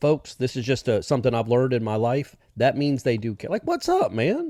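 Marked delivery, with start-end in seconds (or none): 3.6-4.5 bright, very high, animated, lively inflected voice. Showing how someone who cares greets you: lively, inflected greeting. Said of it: "voice inflects to that level".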